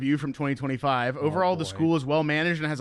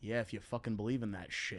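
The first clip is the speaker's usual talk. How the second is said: put-on mutter under breath, much quieter; 6 semitones lower, 14 dB quieter than usual. Retelling what a classmate said in eighth-grade science class: imitating a mutter under breath. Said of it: "he under his breath went".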